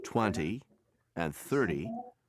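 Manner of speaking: twenty and thirty with first syllable hit hard. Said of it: "always stress the first syllable".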